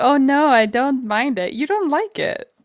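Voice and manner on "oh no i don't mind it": play-acted coy, offhand, slow, dismissive tone. Teasing another speaker by mimicking them: mocking imitation of coy indifference. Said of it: "Don't sit over there like you're like".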